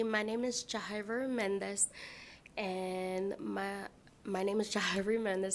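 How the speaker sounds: flustered, nervous stumble, words drawn out. Testifying before a committee, giving one's name for the record: nervous, stumbling. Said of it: "Sorry, nervous".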